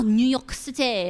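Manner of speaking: French pronunciation of "New York City". Listing fashion cities where expensive goods are sold: French accent. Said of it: "gave New York City a French accent".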